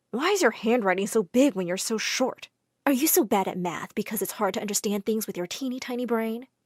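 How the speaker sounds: ordinary delivery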